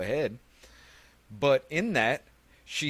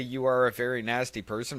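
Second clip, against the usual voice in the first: plain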